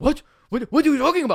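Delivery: put-on thick German accent, shrill, very high and loud. Retelling what his dad said to him, in a crazy german accent. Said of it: "He's got this crazy German accent".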